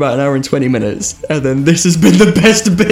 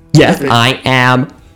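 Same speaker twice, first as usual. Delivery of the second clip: robotic voice; 5 semitones lower than usual. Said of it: "that was a robot voice".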